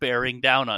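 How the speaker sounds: ordinary delivery, nothing marked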